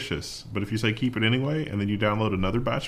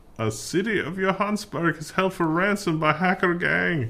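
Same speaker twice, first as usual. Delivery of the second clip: failed put-on German accent, pitched up; 7 semitones higher than usual. Podcast host reading a news headline aloud to co-hosts: bad german accent. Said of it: "That was supposed to be a German accent".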